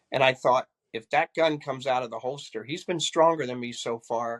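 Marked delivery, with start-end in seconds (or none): none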